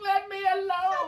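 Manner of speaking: very high, shrill screeching scream. Retelling being woken by phone notifications: retelling own scream. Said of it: "I'm screaming at the phone".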